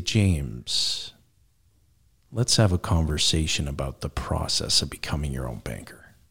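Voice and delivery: very low late-night FM radio host voice. Showing how to calm an overexcited interviewee, in a late-night fm dj voice. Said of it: "If I use my late night FM DJ voice".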